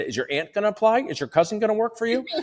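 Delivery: teasing, playful, joking, very high voice. Retelling their reply to a dentist who wants to hire alone, retelling a joking jab. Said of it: "So I say it in a joking way".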